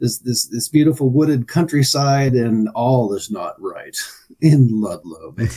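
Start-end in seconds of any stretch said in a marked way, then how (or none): 2.3-5.5 dramatic movie-trailer voiceover narration. Describing a movie's opening scene, then doing a movie trailer voiceover voice. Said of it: "I can hear the movie voiceover guy".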